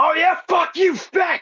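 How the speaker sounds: put-on, very high, dragged-out shout. Retelling yelling back at a guy on the street: imitating own past yelling. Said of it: "I yell back at him".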